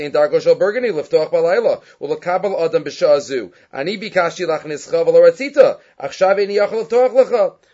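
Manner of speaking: ordinary talk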